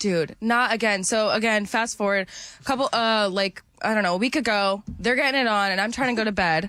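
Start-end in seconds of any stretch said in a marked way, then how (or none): none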